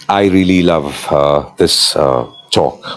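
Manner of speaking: flat, slow, emotionless reading. Showing a line with no emotion added: flat, no emotion. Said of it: "here I'm not using any emotion. It looks very bland".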